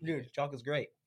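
speaking while chewing, mouth full of food. Eating chocolate with co-hosts while talking, talking with mouth full. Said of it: "we have like food in our mouth".

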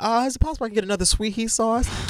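acted sweet, extra-polite, high-toned voice. Retelling asking a clerk for more sauce: imitating own overly nice tone. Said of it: "I'm trying to be nice".

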